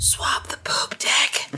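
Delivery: very slow, drawn-out whisper. Voicing a character who grabs another by the scruff: whispering in his ear. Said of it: "whispers in his ear".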